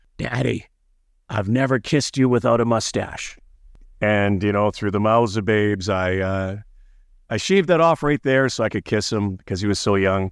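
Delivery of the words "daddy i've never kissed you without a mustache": put-on small, raspy, gravelly little child voice. A father retells what his little son said to him, imitating Brody's little gravelly voice. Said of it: "he had this little gravelly voice".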